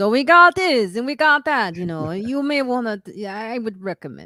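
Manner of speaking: put-on loud, thick, heavy Italian accent. Retelling what a waiter said to the table, in a very Italian accent. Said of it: "very Italian accent. He goes".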